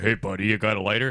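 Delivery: deep, gravelly, raspy voice. Retelling what a drag queen said behind him: imitating a gravelly voice. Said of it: "he had the real gravel voice".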